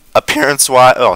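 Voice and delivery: voice cracking and breaking in pitch. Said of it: "my voice just cracked bad there".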